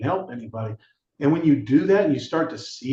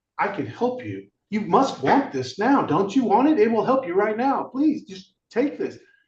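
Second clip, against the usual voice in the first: mock pushy, eager, high-pitched begging, pleading tone; 6 semitones higher than usual. Retelling offering help to people, imitating own eager pleading. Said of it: "I now know something that".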